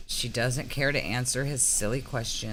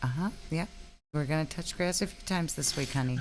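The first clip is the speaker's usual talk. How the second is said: placating, humoring tone; 3 semitones higher than usual. Acting out a mom with a four-year-old who won't stop talking: mock mom humoring a child. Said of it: "It's like a mom when".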